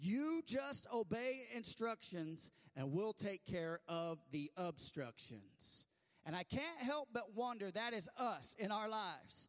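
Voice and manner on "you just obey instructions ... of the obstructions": play-acted, firm, stern, commanding voice. A speaker retells what the radio tower said to a panicking man, retelling a loud stern order. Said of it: "with a loud, stern voice".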